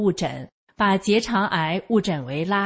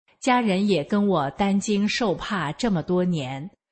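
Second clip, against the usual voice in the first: usual speaking voice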